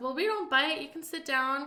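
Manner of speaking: normal talking voice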